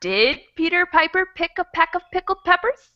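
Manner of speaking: mild questioning lift ending on peppers. Reading the peter piper line as a question: slight rising pitch toward the end. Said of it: "my voice starts to go up a little bit".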